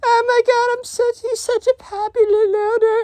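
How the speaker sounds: squeaky, very high-pitched put-on voice. Retelling what the emo kid said in class: voicing the emo kid. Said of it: "I keep breaking character".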